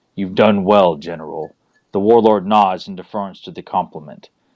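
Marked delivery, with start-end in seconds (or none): 0.2-1.6 chilling, bone-chilling hissing voice. Narrator reading a hooded lord speaking to his general, in a chilling hiss. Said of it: "his voice hisses out in a manner which chills the bone".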